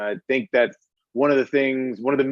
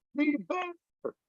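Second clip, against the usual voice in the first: put-on shout, higher; 10 dB quieter than usual. Retelling a friend cheering from the stands: imitating someone yelling. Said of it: "He just yells out".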